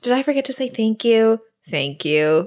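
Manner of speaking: put-on irritation, grudging, secretly pleased tone. Retelling a character's reply, pretending to be annoyed: imitating mock annoyance. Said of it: "Pretending that she's annoyed".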